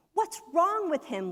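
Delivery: loud yelling. Someone recounting a group reading, quoting another member, retelling a shout. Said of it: "Lee shouted".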